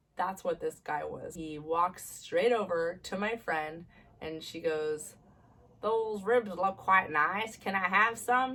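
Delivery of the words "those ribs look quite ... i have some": put-on sinister British villain accent. Retelling a man asking the speaker's friend for her ribs: creepy british villain accent. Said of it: "stereotypical creepy villain with a British accent".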